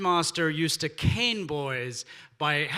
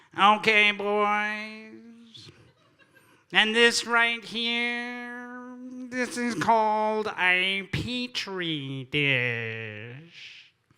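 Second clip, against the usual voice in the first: put-on very nasal teacher voice, drawn-out "boys"; 4 semitones higher than usual. Recalling science class, the speaker quotes the teacher in a very nasal voice. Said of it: "in a very nasally voice".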